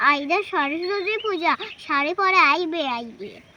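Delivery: ordinary talk, nothing marked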